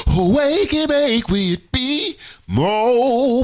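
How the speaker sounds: voice cracks, high and slow. Host welcoming listeners back to another episode of the show, voice cracking. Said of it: "My voice cracked".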